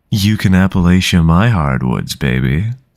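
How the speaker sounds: deep, loud, sultry sexy-man voice. Streamer thanking a new follower, redoing the line in the Tumblr sexy man voice. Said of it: "in the Tumblr sexy man voice".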